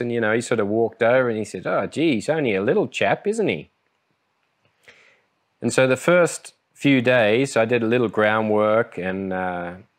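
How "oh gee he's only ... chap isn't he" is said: put-on strong Australian accent, pitched high. Retelling what Fraser said on coming in, ripper Aussie accent. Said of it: "with a, a ripper, uh, Aussie accent".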